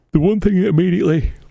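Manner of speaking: talking through a yawn. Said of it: "you have to forgive me for yawning at you".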